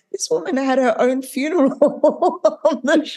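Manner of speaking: high voice, laughing through the words.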